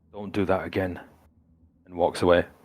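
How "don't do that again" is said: through gritted teeth, much quieter. Narrating the story, the speaker voices a man who stops: through gritted teeth. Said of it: "through gritted teeth he says".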